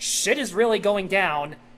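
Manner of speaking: ordinary delivery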